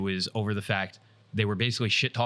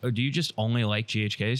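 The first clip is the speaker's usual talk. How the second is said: ordinary talk, nothing marked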